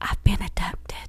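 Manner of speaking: hushed whisper. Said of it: "Why are you whispering like that?".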